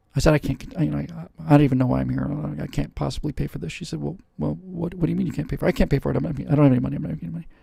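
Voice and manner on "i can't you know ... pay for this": usual speaking voice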